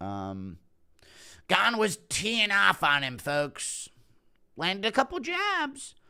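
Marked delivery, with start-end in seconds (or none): 1.5-5.9 gushing ringside commentator voice, pitched very high. Doing a bit on fight commentary about Gane and Aspinall, as a Joe Rogan impression. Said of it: "Impression of Rogan".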